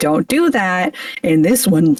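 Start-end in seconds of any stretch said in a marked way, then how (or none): 0.0-1.0 motherly chiding, scolding voice. Comparing a character's line to a mom telling someone off: mock-chiding mom voice. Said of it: "it sounds like a chiding mom being like".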